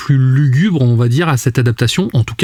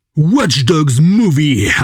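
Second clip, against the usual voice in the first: exaggerated, cheesy American movie-trailer voice; 2 semitones higher than usual. Naming a hoped-for film, American B-movie trailer accent. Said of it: "avec mon wow. accent euh, euh, américain euh, de, de film, euh, de bande-annonce de nanar".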